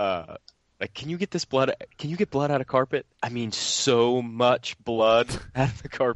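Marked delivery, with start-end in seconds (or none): 0.9-6.2 thoroughly paranoid voice, pitched up. Retelling a prank call to a carpet cleaner: imitating a paranoid voice. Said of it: "he would put on this real paranoid voice".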